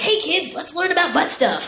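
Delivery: lively workshop-leader tone. The speaker shows how she sounds teaching a workshop: animated workshop-teacher voice. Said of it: "I'm fairly animated when I teach a workshop".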